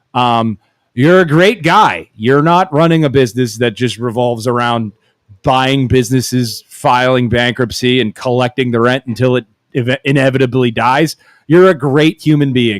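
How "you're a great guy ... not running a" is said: usual speaking voice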